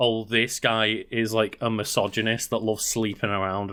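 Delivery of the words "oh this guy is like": usual speaking voice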